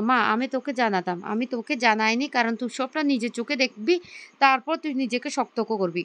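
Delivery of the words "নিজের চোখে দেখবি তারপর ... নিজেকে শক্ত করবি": ordinary delivery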